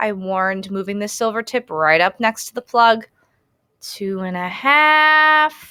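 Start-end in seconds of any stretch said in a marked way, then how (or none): 3.8-5.5 very slow, stretched-out, drawn-out delivery. Narrator counting down a warning before jamming the tip in, said real slowly. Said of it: "I said real slowly".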